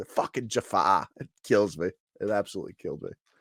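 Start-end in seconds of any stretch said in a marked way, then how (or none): 0.0-1.1 put-on line delivered in a Boston accent. Quoting a line from a show as the character says it, Ted's Boston accent. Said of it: "he says it in the Boston accent".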